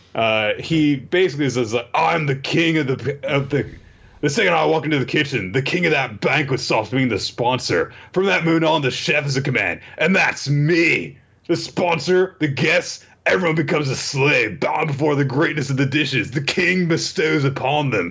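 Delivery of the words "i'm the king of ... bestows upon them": put-on surfer dude voice, higher. Retelling a chef character's speech to a gangster: surfer dude voice. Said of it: "he's Surfer Dude again".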